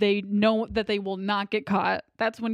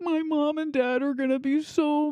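higher, mock whining voice; 6 semitones higher than usual. Retelling a movie scene after the police are called: imitating someone whining. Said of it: "he's, like, whining".

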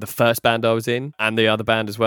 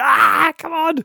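put-on, very high screaming cry; 4 dB louder than usual. Speaker retells dragging aching legs along the beach, retelling screaming at oneself. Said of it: "screaming at myself".

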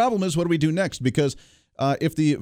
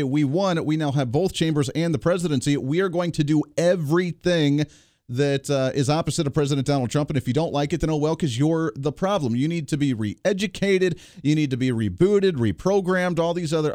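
ordinary delivery

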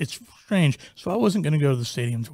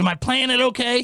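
very high-pitched, unsure-sounding voice; 10 semitones higher than usual. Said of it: "if you know C C's voice".

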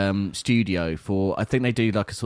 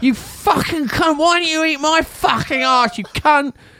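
put-on very high, livid drunken voice; 6 dB louder than usual. Retelling a livid visitor at the door, imitating drunk Karen Brady. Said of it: "She sounds drunk".

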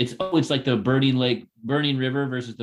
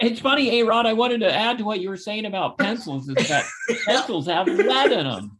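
deferential, yielding delivery in a higher tone; 9 semitones higher than usual. Doing an impression for the others: imitating someone deferring to A-Rod. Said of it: "That was a really good impression".

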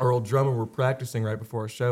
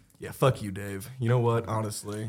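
plain

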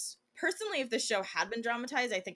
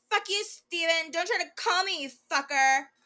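loud, very high mock drunken tirade; 9 semitones higher, 7 dB louder than usual. Performing a favorite quote in which Kristen tells off Steven, imitating Kristen's drunk voice. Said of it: "I'm going to do it in Kristen's drunk voice".

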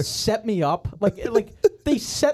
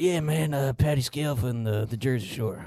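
very low, slow, unhurried, rambling rock-star voice; 9 semitones lower, 6 dB quieter than usual. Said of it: "Every time [name] does an impression of someone".

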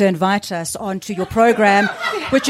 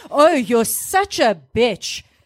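playfully angry, put-on angry tone; 3 semitones higher than usual. Playing an angry-compliments game on a show, giving a mock-angry compliment. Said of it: "Angry compliments".

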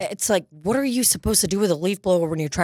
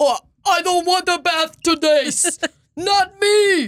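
very high, loud, slow, drawn-out dopey voice; 12 semitones higher, 5 dB louder than usual. Voicing a dog who refuses a bath: Cookie Monster voice. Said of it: "I feel like Simba talks like Cookie Monster".

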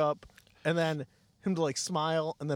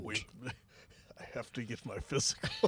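raspy put-on villain voice, lower and quieter; 5 semitones lower, 6 dB quieter than usual. Acting out a waiting-room bit with another speaker: raspy Darth Vader voice. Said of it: "Sounds a little raspy there, Darth".

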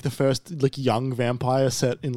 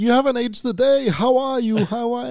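put-on very high-pitched elderly man's voice; 11 semitones higher, 4 dB louder than usual. Retelling a show scene where an aged muse talks to a vampire: old man voice. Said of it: "he's like a really old man".

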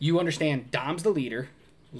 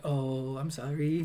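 mock sheepish tone, quieter and slower; 5 dB quieter than usual. Retelling a scene where Dom scolds Vince: imitating Vince's puppy-dog apology. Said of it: "turn into a little puppy dog".

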